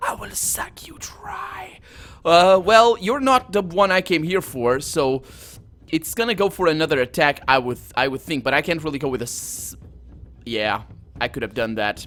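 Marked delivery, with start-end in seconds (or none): 0.0-1.8 very slow, hissing wraith whisper. Narrating a fight to a player, voicing the skeletal wraith in a hissing wraith voice. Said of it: "It hisses".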